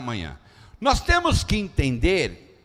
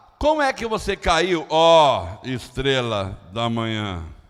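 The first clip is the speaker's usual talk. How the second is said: heavily ironic tone. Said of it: "forma irônica de Deus falar".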